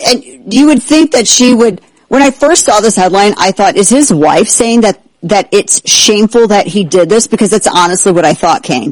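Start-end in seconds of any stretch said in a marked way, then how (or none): none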